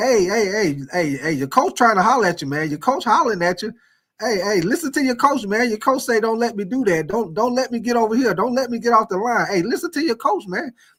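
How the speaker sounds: play-acted taunting, needling jabber with repeated "hey". A football player acts out what he says to an opponent, retelling taunting trash talk. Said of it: "I'm saying".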